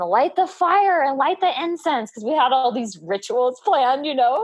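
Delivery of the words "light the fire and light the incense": mock, high, urgent yell. Retelling giving birth, quoting orders to the husband: imitating own past yelling. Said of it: "I'm yelling at my husband".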